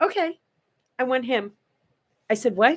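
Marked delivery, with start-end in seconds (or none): 0.0-1.5 mock very calm, soft and unbothered. Recounting a woman's reply on seeing Milton Berle sign in, retelling a calm line. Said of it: "she says very calmly".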